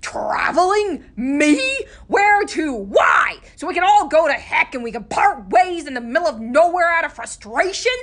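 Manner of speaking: shrill, very high, very loud furious tirade. In a story, Lem answers a suggestion to go traveling: Lem's angry outburst.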